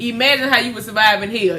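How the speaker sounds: ordinary delivery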